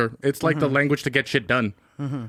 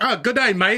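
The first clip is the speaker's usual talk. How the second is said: fake, cheery, pitched-up bad British accent; 8 semitones higher than usual. Describing an american in a london cab putting on a bad british accent. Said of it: "Americans try to imitate their accent".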